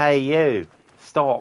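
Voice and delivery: loud, high-pitched, put-on Australian accent. Repeating a game character's line: imitating an australian accent. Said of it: "He sounds like an Australian".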